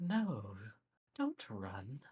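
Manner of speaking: whispering, slow. Narrating a chase, the voice pursuing the fleeing player speaks: whispering. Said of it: "You hear the same voice whisper behind you".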